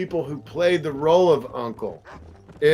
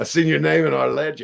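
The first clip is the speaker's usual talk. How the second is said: put-on gruff outlaw voice. Retelling hearing the trailer line, trying to imitate Arthur Morgan. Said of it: "however he says it, I can't do it".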